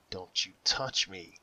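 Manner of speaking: calm, steady, unwavering, composed voice. A sobbing woman jerks away from the man touching her, in a calm, steady voice. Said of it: "she said in a calm, steady voice".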